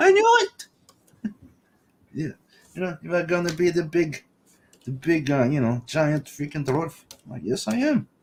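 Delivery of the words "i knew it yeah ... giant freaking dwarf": clumsy put-on German accent, sing-song tune. Speaker acts out a man's reaction to them, in a bad German accent. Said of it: "I'm not good at doing his German accent".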